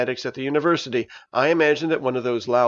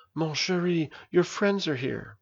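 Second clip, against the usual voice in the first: gentle, soft, hushed words; 2 semitones higher, 6 dB quieter than usual. A mother kneels beside her hysterical daughter and speaks to her softly. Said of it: "and softly said".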